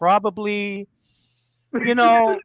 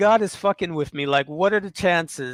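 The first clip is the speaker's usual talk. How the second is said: normal talking voice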